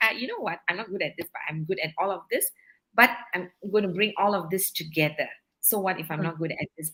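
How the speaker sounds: plain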